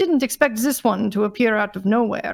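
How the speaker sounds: plain reading voice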